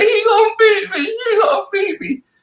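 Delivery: put-on very high, loud wail, sobbing through words. Retelling what she said after the note came up, imitating loud crying. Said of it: "she bust out crying even louder".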